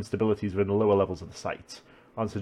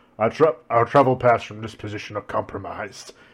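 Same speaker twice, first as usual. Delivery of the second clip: dark, louder demonic voice; 6 dB louder than usual. Voicing Anru explaining the evacuation plan: dark demon voice. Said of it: "a dark demon voice".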